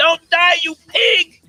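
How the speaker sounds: very loud, high screaming.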